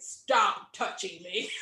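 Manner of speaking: tiny hoarse rasp, kept very low. Retelling a time on a Chicago bus while sick, in a little raspy voice. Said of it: "With a little raspy voice".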